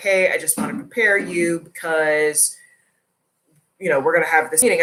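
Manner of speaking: ordinary talk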